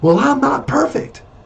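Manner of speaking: sudden, blurted outburst, pitched very high. Retelling own reply to a boss who kept reaming him: imitating own blurted reply. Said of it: "I remember blurting out to him".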